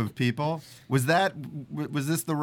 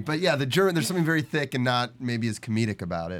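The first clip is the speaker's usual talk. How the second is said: ordinary talk, nothing marked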